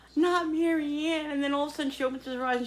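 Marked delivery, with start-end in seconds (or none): 0.2-1.4 very high, dramatic, over-the-top sobbing wail. Retelling a woman's over-the-top performance; imitating dramatic bawling. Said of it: "she's bawling, like really like dramatically".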